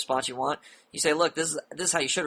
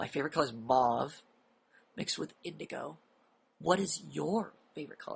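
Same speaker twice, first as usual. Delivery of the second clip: put-on, overly dramatic, grave, intensely serious delivery; 6 dB quieter than usual. Retelling own line from a conversation: imitating an overly dramatic grave tone. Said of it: "I'm sounding like the world's gonna end".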